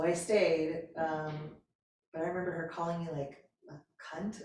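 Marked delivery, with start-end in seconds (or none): none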